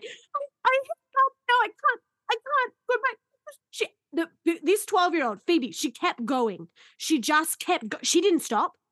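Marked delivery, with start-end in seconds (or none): 0.0-3.2 very high-pitched, crying through the words. Speaker retells freezing in the booth during a performance: imitating crying. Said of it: "I was crying in the buy box going".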